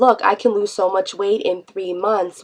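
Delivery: ordinary talk, nothing marked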